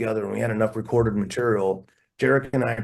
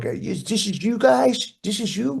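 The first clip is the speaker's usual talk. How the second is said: put-on New York accent, very high and slow; 11 semitones higher than usual. Acting out a man who comes back after the demo played on the PA, in a New York accent. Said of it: "in this New York".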